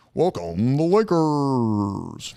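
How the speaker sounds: sports arena announcer voice, words drawn out. Answering a favorite NBA team question, then doing a sports announcer voice. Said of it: "I sound like that announcer".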